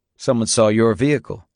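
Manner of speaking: plain reading voice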